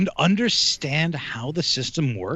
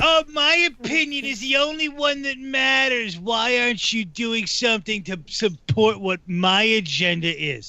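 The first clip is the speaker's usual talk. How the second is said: put-on drunk voice, higher pitched and slow; 9 semitones higher than usual. Mocking self-important people with a put-on voice: drunk Saul Rosenberg voice. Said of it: "You sound like a drunk Saul Rosenberg".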